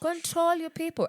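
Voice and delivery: high, loud, mock exasperated voice.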